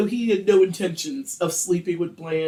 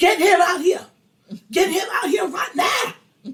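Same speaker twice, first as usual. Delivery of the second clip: play-acted, shrill, very high, repeated screaming; 12 semitones higher, 4 dB louder than usual. Retelling a man following a woman back into the store; retelling his screaming. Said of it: "James follows and starts screaming".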